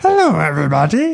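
put-on puppet-monster voice. Asked by the other speaker to do Grover, trying it again: Grover voice. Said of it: "Now you're getting closer to it".

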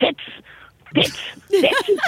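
very high-pitched, acted-out heckling yell. Telling about kids riling up the teacher in class, retelling someone's yell. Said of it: "I hear someone yell".

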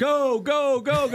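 high mock screaming yell.

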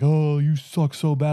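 slow, jawing, taunting yell. Retelling a football opponent's taunt during a play: imitating an opponent yelling. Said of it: "yelling at me, jawing at me".

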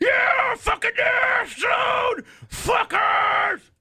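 acted drunk bellow, very high and drawn-out. Acting out drunk fans cheering at a ribbon cutting: imitating drunk shouting fans. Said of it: "they just get fucking hammered".

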